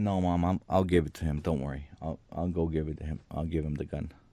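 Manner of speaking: acted, frightened voice, tripping over words. Retelling answering his mom while terrified: imitating own scared voice. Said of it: "But I'm so scared".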